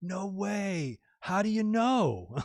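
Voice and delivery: innocent, excited, very slow and swooping. Retell the reaction to hearing about a surprise party, imitating Riddle's innocent, excited voice. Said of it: "in the most innocent voice ever".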